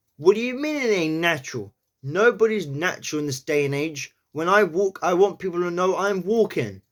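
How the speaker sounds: put-on New York accent throughout. Practising a New York accent on a line said by Arturo Ui: New York accent. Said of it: "walking is very easy to say in a New York accent".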